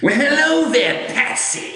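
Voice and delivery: very high, shrill clown-villain voice. After offering listeners a Joker voice, trying it out, Joker voice. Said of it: "Do you guys want to hear my Joker voice?".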